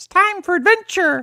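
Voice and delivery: very high-pitched, slow character voice. Answering a request to do a Captain Toad voice: Captain Toad voice. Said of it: "Give me Captain Toad".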